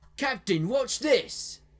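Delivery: high, shrill calling out. Reading a story aloud, a crew member calling to the captain: yelling. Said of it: "one of the crew members yelled out".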